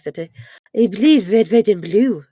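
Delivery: fake French accent on English words. Told to do the line in the french accent: put-on french accent. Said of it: "you gotta do it in the French accent".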